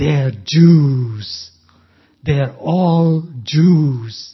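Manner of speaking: mock withering sneer, very slow, one word drawn out. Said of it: "You could hear the withering scorn in his voice".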